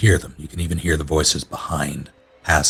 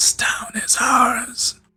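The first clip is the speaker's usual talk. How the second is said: soft, slow, drawn-out string of whispers. Voicing a voice heard inside the characters' minds: whispering voice. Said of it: "It's like a series of whispers".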